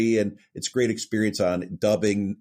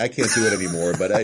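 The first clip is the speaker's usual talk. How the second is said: normal talking voice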